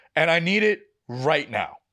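usual speaking voice

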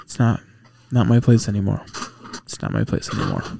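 muttering under the breath. Bakari stares at the ancient Egyptian section, then shakes his head: muttered under his breath. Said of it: "you hear him mutter under his breath".

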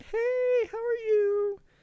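very high, loud, flirty woman's voice. Retelling how a woman greeted the speaker, imitating a woman's higher voice. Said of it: "like voices get higher for females?".

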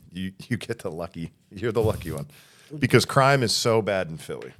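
loud, swooping, mock-serious sarcasm. Putting a question to a guest from Philly, being sarcastic. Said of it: "and I'm being sarcastic".

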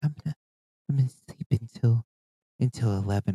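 small, soft, hushed little murmur. Retelling how a friend said she'd sleep late: imitating a quiet little soft voice. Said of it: "this quiet little soft voice".

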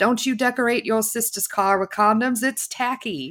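high, carrying, shouted yell. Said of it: "Malin yells out at them".

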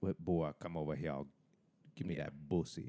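clumsy, unconvincing, bad put-on cowboy accent. Imitating an actor's bad accent in a film. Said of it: "his bad accent and how he's like".

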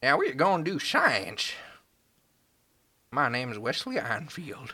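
put-on Midwestern Southern accent. Imagining a Midwestern version of Einstein, speaking in a Midwestern Southern accent. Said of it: "Midwestern Southern, like".

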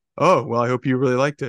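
flat, deadpan delivery. Retelling someone's reply given without missing a beat, retelling Norris's deadpan reply. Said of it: "he can deadpan".

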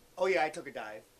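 put-on sarcastic delivery. Retelling what a fighter said about a fight, retelling a sarcastic remark. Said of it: "Woodley sarcastically said".

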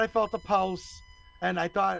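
ordinary talk, nothing marked

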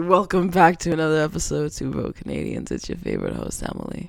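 soft, smoker-sounding voice. Host opens an episode of Two Bro Canadians in a smoker's voice. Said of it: "Smokers voice".

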